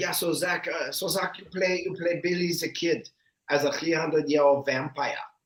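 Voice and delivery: mock heavy German accent. Retelling how a man offered the speaker a role, imitating his heavy German accent. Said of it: "he's very German".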